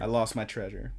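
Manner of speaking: ordinary talk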